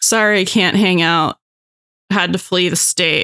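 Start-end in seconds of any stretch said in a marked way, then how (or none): none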